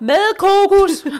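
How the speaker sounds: very loud, very high blurted reflex shout. Retelling a shopping trip, answering her question by reflex: retelling a reflexive shout. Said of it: "per refleks råber jeg".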